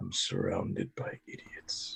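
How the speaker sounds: muttering under his breath. Voicing a character who shakes his head at the group: muttering under his breath. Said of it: "under his breath goes".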